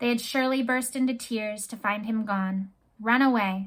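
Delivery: ordinary delivery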